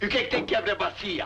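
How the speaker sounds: irritated, angry tone. Arguing about breaking a basin, angry. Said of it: "Você tá brabo".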